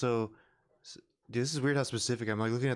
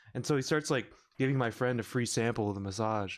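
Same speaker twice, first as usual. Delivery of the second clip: ordinary talk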